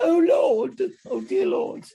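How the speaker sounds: bad put-on old British woman voice, very high, very loud. Speaker shows how they react in times of distress: old British woman voice. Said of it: "I turn into an old British woman".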